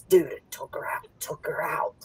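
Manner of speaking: quiet, breathy whisper. Retelling what someone said to a friend at the table: imitating a whisper. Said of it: "he starts whispering".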